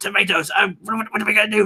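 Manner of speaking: small, very high-pitched, fast-talking little voice. Demonstrating how a chat viewer voiced a tomato, small, quick-talking voice. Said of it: "small, quick talking voice".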